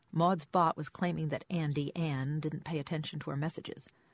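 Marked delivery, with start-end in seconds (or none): none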